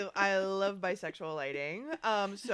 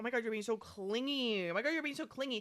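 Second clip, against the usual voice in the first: panicky, overwhelmed, freaked-out blurt; 4 semitones higher, 4 dB quieter than usual. Retelling how Jason reacted to a complaint: imitating someone freaking out. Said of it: "freaks out".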